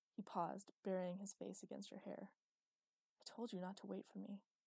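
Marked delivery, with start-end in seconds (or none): 3.2-4.4 whispered softly with relief. He holds her, burying his face in her hair: soft relieved whisper. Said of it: "the words were soft and whispered, filled with relief".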